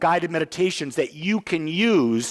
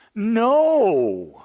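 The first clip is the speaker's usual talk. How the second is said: no stretched out and strongly stressed; 3 semitones higher, 4 dB louder than usual. Speaker answers an excuse the way Jim Rohn would: emphatic Jim Rohn 'no'. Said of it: "who says no like that? Jim Rohn... He put that emphasis on there".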